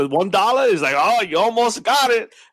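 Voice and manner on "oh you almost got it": put-on, playful, pitched-up needling tease. Imitating the guy in a commercial, imitating a teasing voice. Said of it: "he keeps teasing me".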